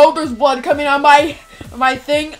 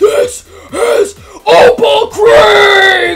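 mock, loud, very slow, angry, "Creek" stretched; 6 semitones higher, 4 dB louder than usual. Acting out what you'd say while tossing a girl in, mock-angry. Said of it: "and you're like angry".

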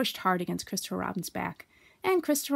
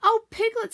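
eager, excited, high voice with rising pitch; 6 semitones higher than usual. A narrator reads Pooh's line as he comes up to Piglet, excited. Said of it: "said Pooh excitedly".

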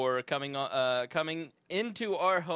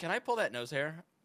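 plain

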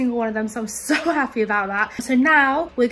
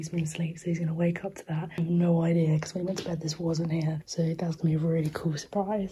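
very quiet, hushed, careful low murmur; 7 semitones lower, 7 dB quieter than usual. Putting out birthday presents while someone sleeps right there, talking very quietly. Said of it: "I'm talking so quietly right now".

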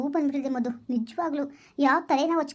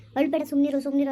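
plain reading voice

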